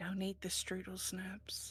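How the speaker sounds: acted whisper. Warning someone at dinner in character: whispering in character. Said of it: "I kinda whisper to someone".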